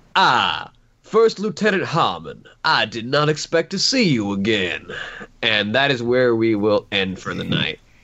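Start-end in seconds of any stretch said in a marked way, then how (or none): 0.1-4.8 animated, swooping put-on character voice. Voicing a figure who greets the party from the room's corner: put-on character voice. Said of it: "let me get the voice right".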